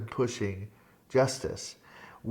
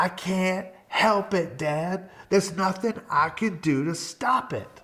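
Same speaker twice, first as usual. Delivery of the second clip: mock exasperated, drawn out, pitched up; 7 semitones higher than usual. Retelling what the son says each birthday: imitating son, exasperated.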